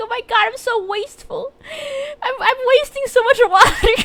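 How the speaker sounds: very high, loud, tearful breaking-down voice. Retelling childhood worry about wasting water: imitating own past crying. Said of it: "break down crying when I was a kid".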